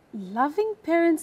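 heavy stress placed on the words "loving parents". Student rereading a script line as the coach asked, stress on 'loving parents'. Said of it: "Now read it like that".

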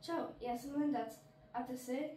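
ordinary delivery

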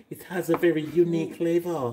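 lofty, authoritative gourmet-expert voice. Teasing another speaker by imitating how they said unique, like a culinary genius. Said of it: "like you're a culinary genius".

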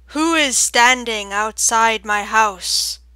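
very loud, deep, booming, round organ-like voice. Reading a story, a voice echoing from a hollow trunk, in a deep round voice. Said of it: "a deep round voice, a voice like an organ tone".

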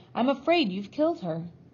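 dark, grave tone. A man points a finger at the narrator and speaks darkly. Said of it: "pointed a finger at me and said darkly".

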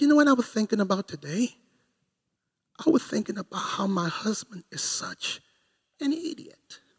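soft, even, unraised voice. Imitating a quiet wife insulting her husband: quiet, not raising her tone. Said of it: "She doesn't raise her tone".

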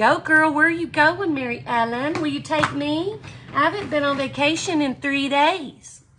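high, playful, smart-aleck teasing. A host demonstrating with a pen jokes with someone nearby, teasing. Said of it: "I'm just teasing".

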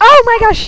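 high, loud, sudden startled outcry.

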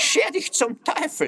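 very high, shrill shriek. A narrator reads a magpie character's line in a story, screeching. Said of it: "kreischte Ella Elster".

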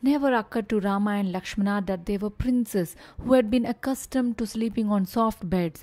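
ordinary delivery, nothing marked

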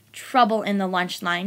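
usual speaking voice

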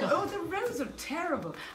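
put-on high-pitched English woman's accent, complaining tone.

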